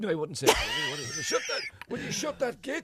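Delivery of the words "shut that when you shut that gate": heated ranting delivery. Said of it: "for Gregory".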